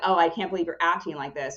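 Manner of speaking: normal talking voice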